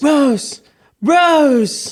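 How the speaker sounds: put-on desperate shout. Acting out the movie's ending on request: shouting Rose like Leonardo DiCaprio. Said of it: "He keeps shouting Rose".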